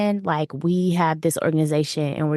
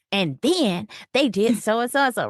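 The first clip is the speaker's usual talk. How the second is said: pissed-off, pitched-up angry rant; 6 semitones higher than usual. Retelling how they sounded laying out facts after a long day: retelling own angry rant. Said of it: "I'm pissed off".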